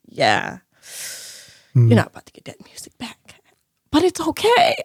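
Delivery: acted, grave, dead serious, matter-of-fact half-whispered delivery. Retelling what a woman said on the phone call, imitating her serious tone. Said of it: "She was so serious".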